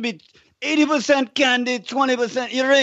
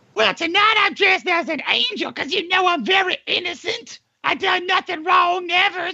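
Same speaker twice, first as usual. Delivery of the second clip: put-on woman's voice with pitch raised; 7 semitones higher than usual. Playing a Halloween visitor dressed as an angel: Hillary Clinton impression. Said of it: "his wife, Hillary Rodham Clinton".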